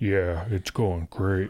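low, slow late night DJ voice. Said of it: "that late night D J voice".

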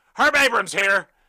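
high, very loud ring-announcer scream. Retelling how the announcer in the ring began, imitating a scream. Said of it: "so high on fucking coke that he just screamed".

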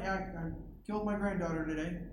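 hushed, soft murmur under the breath. Retelling a president's remark in a receiving line: imitating someone murmuring under his breath. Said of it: "He murmured under his breath".

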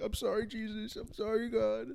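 play-acted crying, high and tearful. Retelling a childhood apology after saying a swear word: imitating own past crying. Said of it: "and I was crying".

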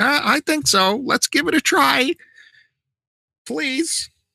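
very high, loud pleading tone.

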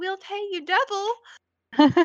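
very high-pitched, slow creature voice. Voicing a mermaid-like creature poking her head out: Margot's voice. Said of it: "Poke her head out, and she's like".

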